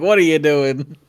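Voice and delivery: voice like a father calling out. Voicing a father speaking to Rawlock about the elves he brought, in a father's tone. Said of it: "a tone of a father being like".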